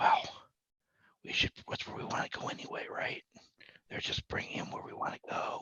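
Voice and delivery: hushed, sneaky whisper. Speaking in character so as not to be heard: whispering. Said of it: "so I whisper".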